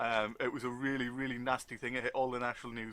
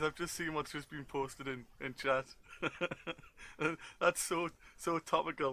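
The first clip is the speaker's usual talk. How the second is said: speech broken up by laughter throughout; 3 semitones higher than usual. Reacting to a message just posted in chat, laughing while talking. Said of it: "I'm sorry for laughing".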